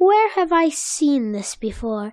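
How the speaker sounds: normal talking voice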